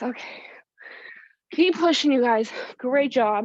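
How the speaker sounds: out of breath. Encouraging the group during a workout, catching breath and panting. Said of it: "trying to catch my breath".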